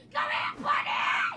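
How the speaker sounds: shouting.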